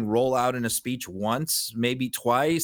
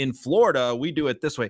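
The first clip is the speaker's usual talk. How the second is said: ordinary talk, nothing marked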